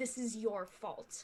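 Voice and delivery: angry, hissed delivery. Emerging from the darkness, she turns on him before clubbing him: hissing. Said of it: "she just hisses".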